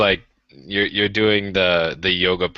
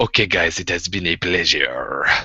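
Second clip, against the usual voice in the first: speaking in a put-on French accent; 3 semitones lower than usual. Relaying someone's goodbye to the guys, in a french accent. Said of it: "That's French".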